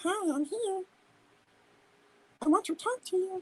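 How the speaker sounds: silly, soft, tiny little voice pitched way up. Describing the voice in their head that talks to them: funny little voice. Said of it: "I have a funny little fucking voice".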